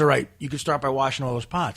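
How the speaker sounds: ordinary talk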